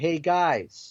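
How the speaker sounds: yelling, calling out. Retelling being left alone in the house, acting out yelling for the guys. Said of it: "So I start to yell out".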